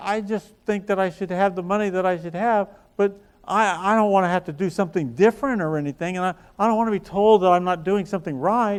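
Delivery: acted crying, words stumbling through tears. Retelling what a crying person said after hearing suggestions: imitating someone crying. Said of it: "she's crying. She said".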